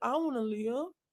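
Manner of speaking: put-on small, soft voice like a child. Retelling what someone said to another's face, imitating a little boy voice. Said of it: "in that little boy voice and said".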